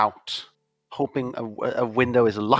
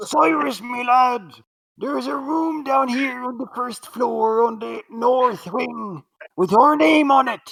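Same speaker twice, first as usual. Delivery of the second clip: booming, very high shout; 12 semitones higher than usual. Trying out a character as Brian Blessed playing Mister Krabs, call to Cyrus in an extensive shout. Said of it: "That was a very extensive shout".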